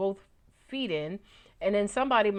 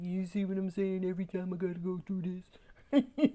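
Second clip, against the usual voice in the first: put-on mopey guy voice, soft, rushed mutter; 5 dB quieter than usual. During a tarot reading, voicing the disengaged figure on the Four of Cups; put-on mopey guy voice. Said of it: "that's my mopey guy voice".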